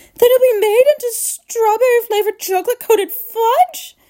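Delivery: shrill, very high shrieking scream. A mother cries out about her son: screaming. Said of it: "Screamed Mrs".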